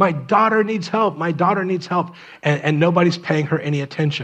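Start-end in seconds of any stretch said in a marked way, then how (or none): 0.0-2.1 put-on woman's scream, higher. Retelling a woman at the edge of a crowd: imitating a woman screaming. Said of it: "she's screaming".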